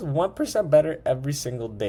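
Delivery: voice cracking and breaking mid-line. Wrapping up and speaking to the guys; voice cracking. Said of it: "I had a crazy voice crack there".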